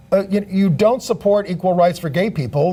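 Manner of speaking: ordinary talk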